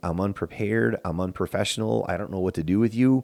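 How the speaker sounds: normal talking voice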